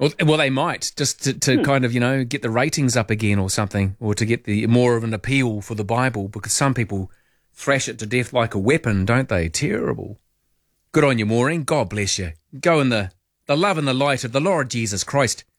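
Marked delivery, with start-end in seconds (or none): 10.9-15.4 sudden switch into Irish accent. The speaker blesses the woman being addressed, suddenly breaking into an Irish accent. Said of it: "I broke into an Irish accent there".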